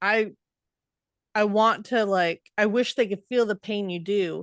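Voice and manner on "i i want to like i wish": usual speaking voice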